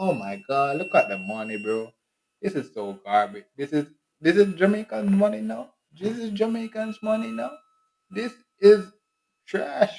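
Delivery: very high, swooping, drawn-out, snooty, scornful voice. Speaker acts out a Jamaican back home after years, playing a returning Jamaican. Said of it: "I'm gonna be like this Jamaican that come back".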